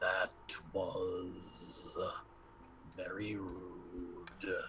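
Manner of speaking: very deep, hushed stone giant voice. Narrating a story, the speaker voices a creature's reply: creature's voice. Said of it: "you hear this voice go".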